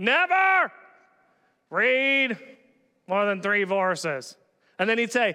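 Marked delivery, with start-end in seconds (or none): 0.0-4.4 low, nasal professor voice, stop-start halting phrasing. Quoting a professor the speaker once had, imitating his nasally voice. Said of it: "He had a little bit of a nasally voice".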